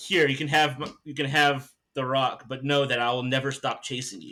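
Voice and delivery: normal talking voice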